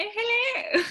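fake upper-class regal voice. Show how your own voice suddenly sounds out loud, in a posh voice like the Queen. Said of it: "I sound like the bloody queen".

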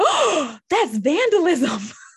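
very high, loud, overblown hyped-up alarm. Retelling a principal reacting to a boy's Sharpie, mock-alarmed hype. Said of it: "the principal hypes it up like".

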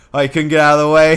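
very loud playful holler. Describing a pitcher who jokingly yells at a batter, retelling a joking yell. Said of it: "basically jokingly yells like".

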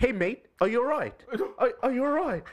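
poor put-on London accent, very high. Retelling a South African actor's line in a show: bad London accent. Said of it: "really poor like South African accents to do London accents".

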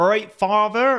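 Plymouth accent. Speaker shows the local accent they are meant to have: Plymouth accent. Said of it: "My local accent is from Plymouth".

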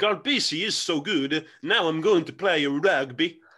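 loud put-on Scandinavian accent, laid on strong. Voicing someone inspired by a star player to take up rugby, Scandinavian accent impression. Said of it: "That is that is like a very Scandinavian impression".

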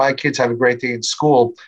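ordinary talk

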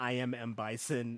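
very slow, drawn-out, every word stretched out. Quoting an actor playing a game villain: Raul Julia as M. Bison. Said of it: "Raul Julia, he was like".

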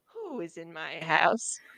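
put-on very low, very slow, creepy old crone voice, drawn out. Retelling how the Weaver reacts when someone touches something, creepy old witch voice. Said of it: "I just gave her a creepy old witch voice".

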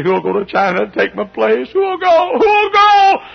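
put-on crying, very high, tearful pleading tone. Retelling an old man's plea before a great crowd: retelling a tearful plea. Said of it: "And he got to crying".

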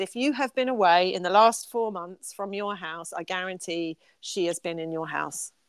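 normal talking voice

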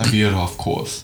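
plain

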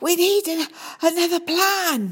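out of breath, gasping. Narrator reading a character's line in the middle of a fight, gasping. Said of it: "he gasped".

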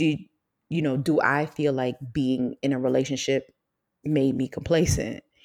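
normal talking voice

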